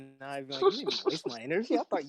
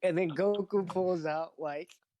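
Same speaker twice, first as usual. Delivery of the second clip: plain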